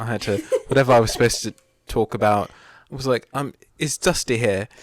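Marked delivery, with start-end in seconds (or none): 3.3-4.7 slow put-on British accent. Retelling a line said on stage in a show: British accent. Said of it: "in my British accent".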